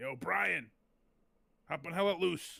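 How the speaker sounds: put-on Brooklyn accent. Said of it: "like a Brooklyn accent".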